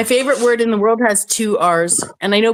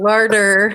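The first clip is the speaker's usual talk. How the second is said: strongly rhotic North American R sounds. Showing the north american way to say the word: hard north american r's. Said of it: "is fucking two hard R's".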